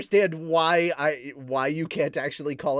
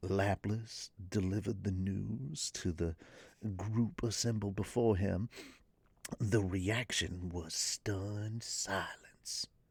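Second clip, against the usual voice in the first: hushed, whispery ASMR tone, very quiet and soft; 6 semitones lower, 11 dB quieter than usual. Reading a story aloud to a group: ASMR voice. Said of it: "the A S M R voice kinda works for that".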